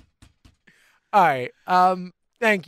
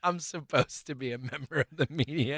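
quiet, with heavy stress on supposed. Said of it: "I like how you said".

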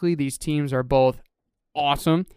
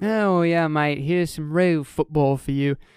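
put-on British accent. Picking the Vikings game and joking about British viewers, in a mock British accent. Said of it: "Fantastic accent".

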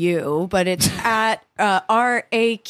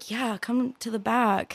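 put-on British accent, much quieter; 6 dB quieter than usual. Acting out being invited backstage at a concert, in a British accent. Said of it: "talk to each other in British accents".

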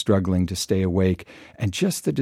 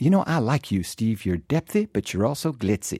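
amateur, put-on Southern accent. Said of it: "That was my attempt at a Southern accent".

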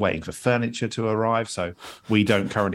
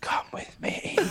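put-on whisper, quieter.

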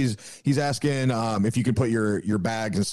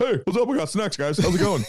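piped-up talking dog voice, very high; 10 semitones higher than usual. Retelling the dog popping out of the bag, voicing the dog. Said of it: "the dog just popped his head up like".

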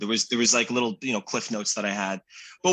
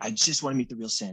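put-on high raspy little-kid voice. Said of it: "he has this raspy voice".

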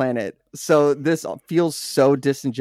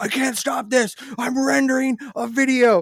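acted-out shrill, very high, frantic shrieking scream; 11 semitones higher than usual. Retelling a video where a man's Windows Update interrupts rendering: imitating someone screaming. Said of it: "he's just screaming".

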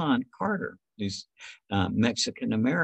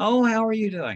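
very high, loud, bright and cheerful voice; 13 semitones higher, 6 dB louder than usual. Retelling a phone call from Christine, imitating Christine's cheerful voice. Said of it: "I remember her cheerful voice".

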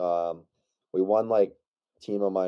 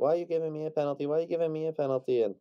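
high-pitched, whiny, whining complaining tone; 8 semitones higher, 4 dB quieter than usual. Retelling how an opposing player whined to the ref: imitating someone whining. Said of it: "he was crying to the ref".

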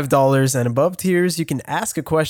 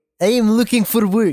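put-on heaviest Russian accent, laid on thick, pitched up; 6 semitones higher than usual. Retelling what a woman answered when asked what she does, thickest Russian accent. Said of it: "in like the thickest Russian accent".

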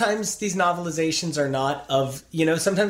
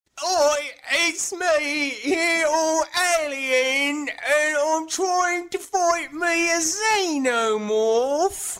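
badly put-on British accent, very high pitch; 10 semitones higher than usual. A co-host is invited to do his british accent, in a put-on british accent. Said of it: "this is your chance to do your British accent".

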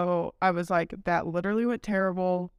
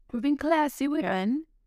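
bad put-on British accent, pitched up; 8 semitones higher than usual. Joking about drinking wine instead of shots: bad british accent. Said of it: "That was a bad take on my, um, British accent".

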